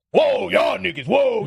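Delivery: very slow, mocking, taunting put-on drawl. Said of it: "Why is your mocking voice D M X".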